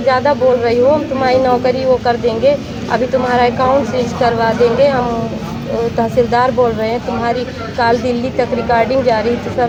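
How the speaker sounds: plain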